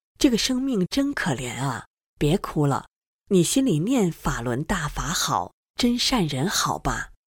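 ordinary talk

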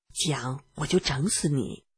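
soft, barely audible, threatening tone.

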